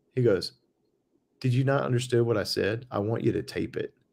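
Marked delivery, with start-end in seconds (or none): 1.4-3.8 mock angry outburst, flipping out. Retelling how the engineer answered a question about taping, imitating someone flipping out. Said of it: "he flipped out".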